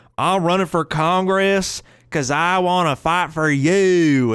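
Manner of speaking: very slow, exaggerated, played-up Southern drawl. Mimicking a southerner running for congress, exaggerated southern accent. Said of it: "when they run for office, they play it up".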